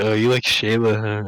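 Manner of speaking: mocking, needling, teasing tone. Retelling how one guy made fun of another, acting out a mocking tease. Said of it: "Roy was like making fun of Roberto".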